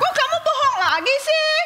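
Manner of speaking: high, cross, angry tone. Confronting someone who lied to her again, angry scolding. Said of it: "kenapa kamu marah-marah?".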